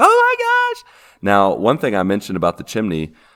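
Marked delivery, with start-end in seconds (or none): 0.0-0.9 very high, shrill, loud screaming. Imagining a bat loose in the house: pretend screaming. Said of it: "I would just be screaming, like".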